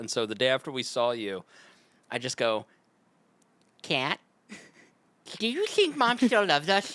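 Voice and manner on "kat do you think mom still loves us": goofy, silly, high-pitched put-on comic voice. Retelling how they made someone laugh: silly funny voice. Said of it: "the way to make Kat laugh is a funny voice".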